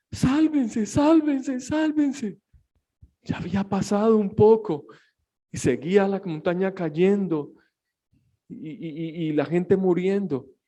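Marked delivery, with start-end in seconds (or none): 0.1-2.3 put-on sobbing, high, shouted. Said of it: "Y lloraba y gritaba".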